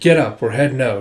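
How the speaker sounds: ordinary delivery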